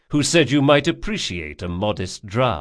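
ordinary delivery, nothing marked

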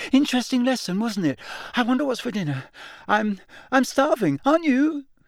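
very high, unnatural, far above normal pitch. A student answers a classmate who has just spoken to him; voice much higher than usual. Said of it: "his voice much higher than usual".

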